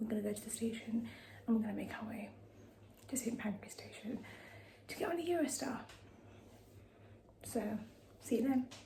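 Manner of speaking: quiet, hushed voice. Speaking at night while people nearby are sleeping: speaking quietly. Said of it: "I'm trying to speak quietly 'cause people are sleeping".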